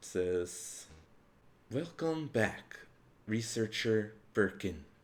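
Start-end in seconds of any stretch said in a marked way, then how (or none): 1.7-4.8 echoing, reverberating voice from nowhere. As the listeners enter, an unseen voice greets them; echoing disembodied voice. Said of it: "echoing voice".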